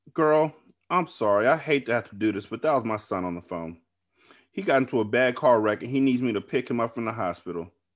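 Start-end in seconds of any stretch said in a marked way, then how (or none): none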